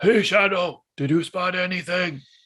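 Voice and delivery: loud, high-pitched stage whisper. In a role-play game, a character calls up to a companion in a loud stage whisper. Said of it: "He whispers up loudly".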